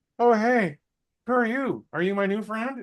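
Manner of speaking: friendly, very high-pitched little dog voice. Retelling a movie trip, voicing a friendly little dog: voicing a friendly little dog. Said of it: "that little guy, it's a friendly little dog, but just went".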